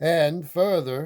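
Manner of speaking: plain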